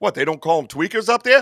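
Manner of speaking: straight-faced, earnest, dead serious tone. Retelling what another speaker once asked: imitating a dead serious question. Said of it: "he was, like, dead serious".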